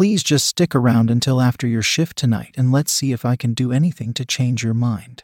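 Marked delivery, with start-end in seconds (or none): none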